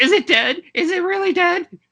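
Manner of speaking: very high, shrill, loud, panicked, terrified screaming. Game narrator voicing one of two men over a fallen creature, screaming. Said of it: "the other guy screams".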